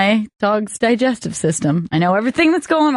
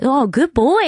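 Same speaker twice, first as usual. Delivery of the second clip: happy, much slower voice; 4 semitones higher than usual. Showing how you praise a dog after a trick, saying it all happy. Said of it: "you're like saying it all happy".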